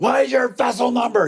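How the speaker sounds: imitated top-of-lungs yelling. Telling a story about a confrontation, act out the third man who joined in and demanded information, imitating top-of-lungs yelling. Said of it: "he's now yelling at the top of his lungs".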